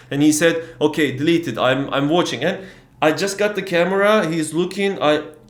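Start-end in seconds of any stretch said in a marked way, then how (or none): none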